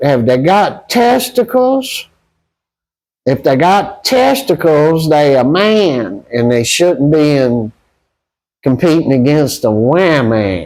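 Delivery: put-on drawn-out Southern accent. Retelling what a man kept saying to the president of the NCAA, in a Southern accent. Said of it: "I'm going to do it in the Southern accent".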